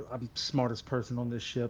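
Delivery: soft muttered aside under the breath. Playing a character walking past another, muttering to himself. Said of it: "just mutter to himself".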